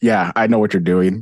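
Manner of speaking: firm, stern, knowing mother's tone. Acting out Bulma catching Pilaf doing something: imitating a stern mom. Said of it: "like the stern mom".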